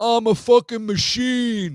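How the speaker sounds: put-on very high wannabe mobster voice, Rhode Island accent. Retelling a guy who yells out of nowhere at the shower, wannabe Tony Soprano voice. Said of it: "That's my best Rhode Island East Coast wannabe Soprano".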